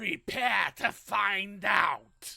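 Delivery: booming, slow, rough, raspy delivery. Retelling a cartoon scene and Tim Curry's line: Tim Curry voice. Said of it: "in his best voice".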